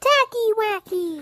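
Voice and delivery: very high squeaky voice. Recalling an old clip of their childhood self saying a catchphrase, really high-pitched voice. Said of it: "I was able to do a really really high voice".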